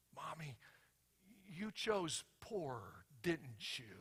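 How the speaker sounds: put-on soft, quiet whisper in a small child's voice. Retelling a joke where a daughter leans to her mom: imitating a child whispering. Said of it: "she whispers".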